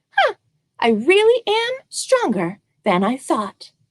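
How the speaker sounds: tiny, high, little storybook mouse voice. Storyteller voicing a mouse at the end of a story: tiny voice. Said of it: "I heard a tiny voice say".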